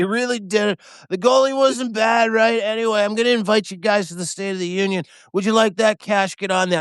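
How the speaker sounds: mock feeble, fading voice. Retelling a speakerphone call, imitating Trump sounding like he's dying. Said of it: "he sounded like he was dying".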